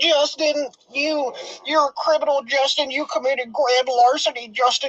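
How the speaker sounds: squeaky, lispy, very high taunting voice. Mocking how a troll taunts justin, mocking high-pitched lispy voice. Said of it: "He has a high pitched".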